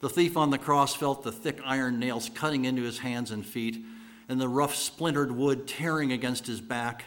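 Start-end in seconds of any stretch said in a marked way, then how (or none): none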